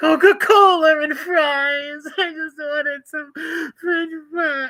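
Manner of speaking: mock very high, slow blubbering crybaby crying. Speaker mocks a man who messaged him, in a mock-crying Bill Catolo impression. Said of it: "Because he's always crying".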